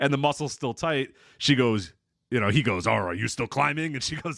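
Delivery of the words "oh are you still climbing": put-on Japanese-accented wrestling manager voice. Retelling what he asks about her climbing: Mister Fuji voice. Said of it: "I don't know why he sounds like Mister Fuji".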